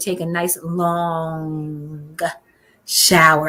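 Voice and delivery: the word long stressed hard, with a pause after.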